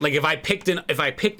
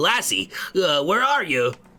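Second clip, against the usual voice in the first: put-on elderly man's voice. Voicing a character calling for the missing companion: old man voice. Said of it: "That's a better old man voice".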